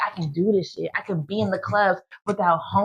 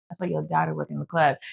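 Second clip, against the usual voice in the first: put-on mutter under breath, lower and quieter; 4 semitones lower, 5 dB quieter than usual. Retelling a remark made after mom cut off money: retelling mumbling under breath. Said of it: "I mumble under my breath".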